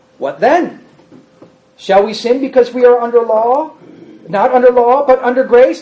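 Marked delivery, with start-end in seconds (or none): none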